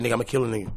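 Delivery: put-on deadly serious voice. Retelling a stranger's threat after the funeral: imitating someone dead serious.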